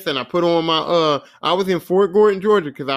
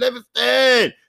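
high, excited, urgent scream; 7 semitones higher than usual. Retelling how his friend came running into his room, imitating a friend screaming. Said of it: "he just keeps screaming".

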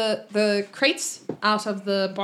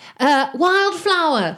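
high, loud hollering shout; 7 semitones higher, 6 dB louder than usual. Voicing a woman calling out over the edge: shouting a name. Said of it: "She shouts".

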